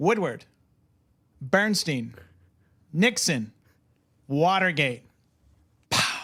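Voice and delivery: slow, deliberate delivery, one word at a time. Summing up a film in one sentence: Matthew Goode as Robert Evans pitching. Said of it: "I'm gonna do it in the style of his pitch for Chinatown".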